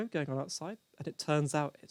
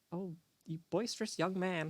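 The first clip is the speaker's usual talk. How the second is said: put-on 1950s film-style American accent; 4 semitones higher than usual. Acting out a 1950s-style flirting line, American accent. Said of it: "how I'm taking an American accent".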